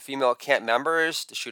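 ordinary delivery

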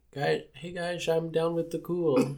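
put-on American accent, Eastern European underneath. Imitating Tommy Wiseau: Eastern European accent trying to sound American. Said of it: "Eastern European accent, maybe, and, like, trying to sound American".

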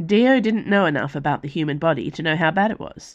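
ordinary delivery, nothing marked

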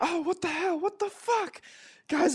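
mock shrill, frantic, high-pitched panicked scream. Retelling how an actor reacted to meat drifting onto him, imitating a panicked scream. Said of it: "and he's like screaming".

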